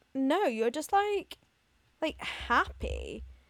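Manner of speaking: mock puzzled, unsure, slow confused voice. Retelling what someone said this week: imitating a confused tone. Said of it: "the way they said it was, like, so confused".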